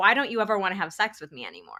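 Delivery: bursting, angry, swooping accusatory outburst. Speaker retells bursting out at their partner, retelling an angry accusatory outburst. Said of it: "in this really angry voice".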